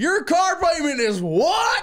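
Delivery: shrill, very high, loud, slow and stretched out. Retelling a video of Dave Ramsey reacting to a caller. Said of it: "he was like".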